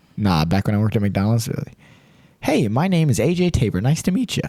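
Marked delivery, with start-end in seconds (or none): 2.4-4.4 sugary, overly polite customer-service voice. Recalling working at McDonald's, greeting drive-thru customers in a customer-service voice. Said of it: "customer service voice".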